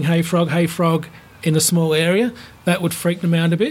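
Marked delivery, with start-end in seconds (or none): none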